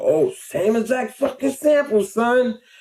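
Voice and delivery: excited, high, outraged indignation.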